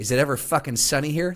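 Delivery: put-on annoyed, fed-up mobster voice. Retelling a movie scene, quoting the mobster: imitating an annoyed mobster. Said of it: "he's no mood for it".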